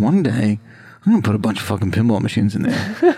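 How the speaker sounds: casual, offhand aside to self. Retelling a vow made about a sitting room: retelling an under-breath mutter. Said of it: "under my breath".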